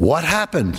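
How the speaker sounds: mock panicked, frantic, alarmed voice. Retelling mom's question on seeing dad's burned coat and hands, imitating mom's frantic voice. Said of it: "In a frantic voice".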